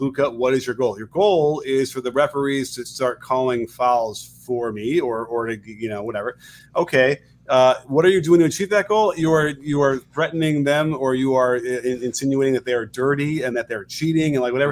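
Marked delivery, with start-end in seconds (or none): none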